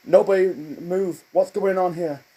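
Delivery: acted jittery panic, stammering and stumbling. Retelling a cartoon scene, imitating panicky nervous Bob Brady. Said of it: "panicky and nervous".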